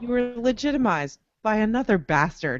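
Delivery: normal talking voice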